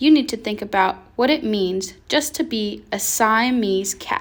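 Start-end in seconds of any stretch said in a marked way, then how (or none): none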